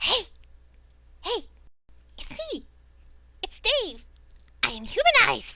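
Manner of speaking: tiny, very high, piping imp voice. The game narrator voices a hidden imp calling to the players, in Dave's little imp voice. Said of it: "you hear a little voice".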